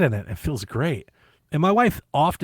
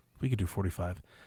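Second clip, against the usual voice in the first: whisper, pitched lower and quieter; 5 semitones lower, 10 dB quieter than usual. Retelling a store worker suggesting a delivery price: imitating a whisper. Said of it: "I hear him whispering".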